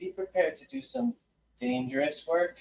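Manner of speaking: voice dropped low and kept hushed. Retelling a woman's message calling the group to the Sunroom; lowered voice. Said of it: "she lowers her voice".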